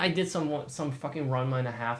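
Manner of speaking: normal talking voice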